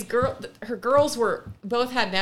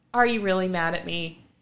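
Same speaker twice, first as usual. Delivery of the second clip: mock, almost apologetic tone. Retelling how a mother asks her daughter, retelling an apologetic question. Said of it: "almost apologetically she's like".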